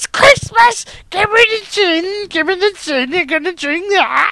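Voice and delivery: put-on very high, shrill, crazed old woman yelling. Asked for christmas background noise, a speaker does a mad old woman voice, shouting. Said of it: "Some mad old woman voice shouting".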